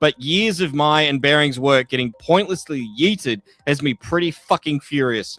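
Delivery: normal talking voice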